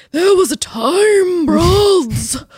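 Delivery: put-on high elderly man's voice, drawn out. Podcast co-host tries out the other host's voice idea, old man voice. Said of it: "talking in like our old man voices".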